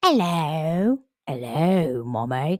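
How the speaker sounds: unhinged put-on creature voice, drawn-out "hello". Speaker demonstrating what it sounds like; psycho voice. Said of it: "Doesn't that sound psycho?".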